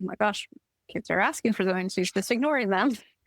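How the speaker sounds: normal talking voice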